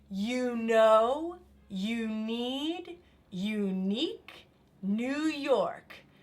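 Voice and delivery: slowed, even delivery. Leading a group through repeating a phrase together, a little bit slower. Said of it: "a little bit slower".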